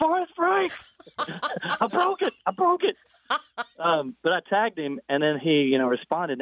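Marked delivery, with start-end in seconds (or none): 0.0-3.0 put-on yell, much higher pitch, slower. Retelling how they yelled up the hill at people after breaking their legs, retelling a yell. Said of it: "I might even yelled back up the hill".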